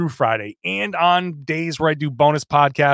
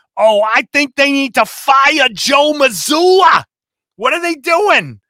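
exaggerated Boston accent; 11 semitones higher, 7 dB louder than usual. Imitating a stereotypical boston sports radio caller, stereotypical boston accent. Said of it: "I can do like the Boston accent guy".

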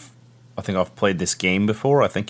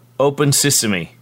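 high-pitched, hollered in-character shout; 7 semitones higher, 4 dB louder than usual. Commanding a door to open in character: in-character shout. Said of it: "Hal just shouts".

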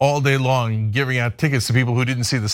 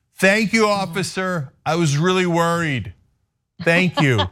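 put-on, pitched-up, loud yelling; 5 semitones higher than usual. Retelling how a friend in the back seat called to the cop: imitating someone yelling. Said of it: "he yells to the cop".

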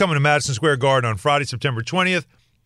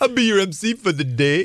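mock Jamaican accent, higher pitch. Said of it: "You made me Jamaican".

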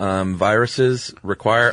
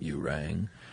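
deep vocal fry butler voice, lower, quieter; 5 semitones lower, 14 dB quieter than usual. Answering a mention of Lurch from the Addams Family: Lurch voice. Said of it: "you do a pretty good Lurch".

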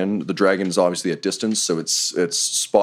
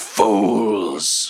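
beastly, snarling dragon voice. A dragon appears from the ruined tower roof: snarling. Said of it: "And snarls".

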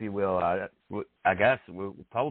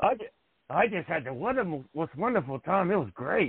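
talking through gritted teeth, pitched higher; 8 semitones higher than usual. Retelling a reply at an airport, imitating Lex Luger through teeth. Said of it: "he took talking to his teeth".

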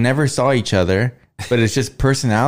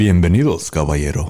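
deep Spanish-language TV announcer voice; 6 semitones lower than usual. Trading Spanish words back and forth, say the greeting in a Telemundo voice. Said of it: "you can do the Telemundo voice".

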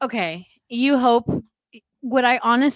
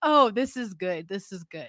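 jeering, derisive, mocking, needling tone; 4 semitones lower, 5 dB quieter than usual. Imitating the other speaker who repeated an earlier idea: mocking imitation of the other speaker. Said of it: "you see that and you're like".

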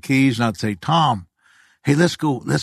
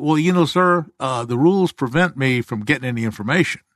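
usual speaking voice

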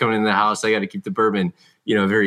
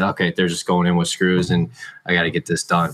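normal talking voice

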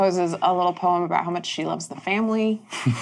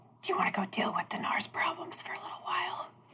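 very quiet, breathy, theatrical stage whisper; 12 semitones higher, 13 dB quieter than usual. Turning on the cart seat to ask a companion on the roof, stage whisper. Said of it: "And I say kind of a stage whisper".

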